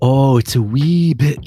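put-on Scottish accent, high, slow and drawn out. Mentioning things that increase metabolism a wee bit: put-on Scottish accent. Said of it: "I'm going to say in my best Scottish accent".

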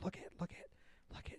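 unvoiced, hushed whisper. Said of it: "she was, like, whispering to him".

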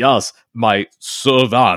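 exaggerated, deliberately terrible, heavy Russian accent. Mocking the worst Russian accent he's ever heard, Orson Welles bad Russian accent. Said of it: "it has the worst Russian accent I've ever heard".

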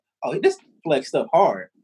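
ordinary delivery

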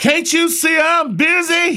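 high-pitched, drawn-out holler at top of lungs. Retelling how a fellow evangelist answered a call: imitating a loud holler. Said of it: "he hollered out at the top of his lungs".

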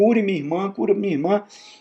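pleading cry, very high-pitched. Retelling Moses begging for his sister: acted pleading. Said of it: "Moisés roga, roga, roga".

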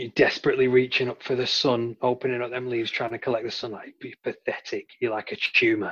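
hushed whisper. Insulting a horse chestnut tree, whispering discouraging words. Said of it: "I'm going to whisper discouraging words".

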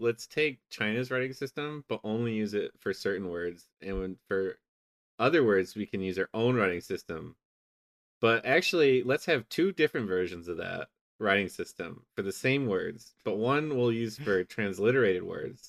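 ordinary talk

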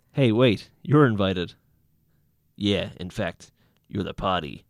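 loud, menacing, threatening voice. Reading a story aloud, the tall one addresses Karen in a menacing voice. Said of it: "That's my menacing voice".

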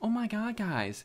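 very high-pitched, drawn-out ad voice. Mocking mobile game ads that open in a really high-pitched ad voice. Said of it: "a really, really high-pitched voice".

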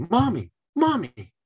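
put-on excited little boy voice, high, loud, eager call.

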